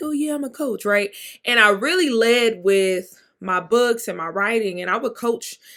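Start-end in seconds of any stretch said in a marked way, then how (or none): 0.0-0.8 tiny, quiet, small, high little voice. Speaker retells introducing themself as a coach, in a small silent inner voice. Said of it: "this little silent little voice".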